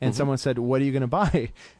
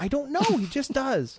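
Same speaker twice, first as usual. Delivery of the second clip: very high voice, annoyed and astonished at once; 11 semitones higher than usual. Showing how to say the stock explanation: upset yet amazed. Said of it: "say it like you're upset or also amazed at the same time".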